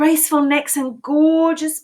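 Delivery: ordinary delivery, nothing marked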